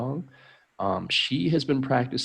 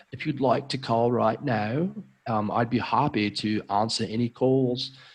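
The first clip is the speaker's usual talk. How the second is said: pretend, put-on British accent; 3 semitones higher than usual. Tutor offering to take calls, showing off a British accent. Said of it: "I have a pretty good British accent when I try. For example".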